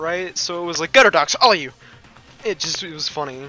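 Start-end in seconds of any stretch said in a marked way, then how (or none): 0.9-1.7 fast, crisp pronunciation. Retelling how she said a villain's line, fast but crisply pronounced. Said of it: "she said it with such speed and yet still, like, pr pronounced it very well".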